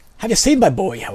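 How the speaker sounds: loud, fully committed, bad put-on pirate voice. Reading a smith character's dialogue aloud, bad pirate voice. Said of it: "That's not Scottish. That's like fucking, I don't know, brain-damaged pirate".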